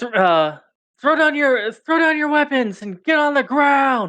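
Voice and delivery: very high-pitched yelling. Narrating a game scene, a guard aiming his crossbow at Remy, yelling. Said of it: "like yelling".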